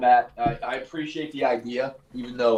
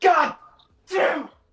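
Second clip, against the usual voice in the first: put-on angry outburst, higher pitch; 4 dB louder than usual. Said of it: "I feel like Bob Knight in that interview".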